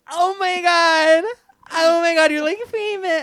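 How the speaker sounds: mock, very high, very loud, drawn-out drunken gush. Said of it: "she'd be so drunk".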